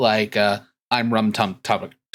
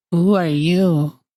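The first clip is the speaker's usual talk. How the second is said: small, high, piping little voice of a tiny creature; 8 semitones higher, 5 dB louder than usual. Game master voicing a small child speaking up next to Allie, in a little voice. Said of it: "you hear a little voice next to Allie".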